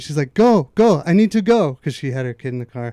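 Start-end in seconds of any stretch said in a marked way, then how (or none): 0.3-1.7 very slow, drawn-out, loud raised-voice yelling. Recounting a rich mother yelling at them while they directed traffic: imitating someone yelling. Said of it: "she was yelling at me".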